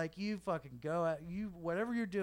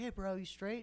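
put-on surfer bro voice, higher; 3 semitones higher than usual. Retelling what another actor said right before a scene, surfer bro voice. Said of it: "He's like a surfer bro".

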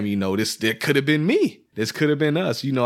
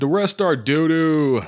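very slow, dragged-out mocking drawl; 4 semitones higher than usual. Imitating another speaker who said the lyrics were bad: imitating another speaker. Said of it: "He's like".

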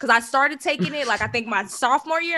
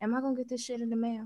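very quiet, hushed, secretive half-whisper; 12 dB quieter than usual. Retelling walking across the graduation stage, speaking to the finance teacher: imitating own past half-whisper. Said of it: "I whispered in my finance teacher's ear".

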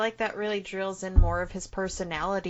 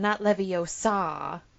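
levio-SA, last syllable stressed, said slowly. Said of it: "one of the things that you hear the most is".

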